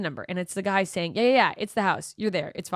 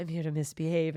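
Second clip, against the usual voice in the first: smouldering, sultry, seductive come-hither tone; 3 semitones lower, 6 dB quieter than usual. Retelling knocking on a door and saying the line: retelling a line in a sultry tone. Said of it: "in a sultry tone".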